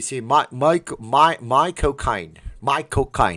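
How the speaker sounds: terrible put-on British accent, loud and slow. Answering a chat request for a British impression: bad Michael Caine impression. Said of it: "I just default to sounding like Michael Caine".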